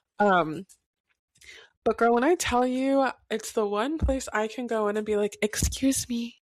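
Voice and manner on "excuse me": soft, light, mild, polite tone. Retelling how a shop's customers are asked to move: retelling a mild, unforceful excuse me. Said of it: "not even with my full chest".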